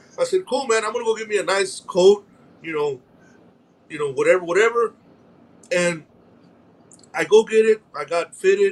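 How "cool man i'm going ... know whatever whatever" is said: ordinary talk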